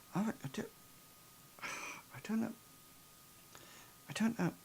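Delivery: troubled, whispered muttering under the breath. Voicing a troubled character leaving a room, Doctor Jekyll muttering to himself. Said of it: "seems to be muttering to himself and going".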